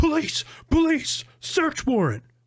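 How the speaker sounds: play-acted, very high-pitched, loud screaming shout. Retelling cops bursting in with a battering ram, retelling police screaming.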